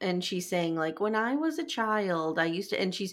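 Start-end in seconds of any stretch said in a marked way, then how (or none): 1.0-2.8 put-on childlike babyish voice like a small child. Retelling a teen's line from a jeans ad: imitating a baby voice. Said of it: "she's really using, like, a baby voice".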